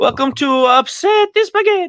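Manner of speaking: very high, booming, half-formed cartoon Italian accent. Host introducing the Upsetty Spaghetti segment on the show, half-done Mario voice. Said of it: "You're like almost half the Mario voice".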